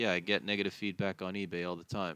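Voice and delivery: ordinary talk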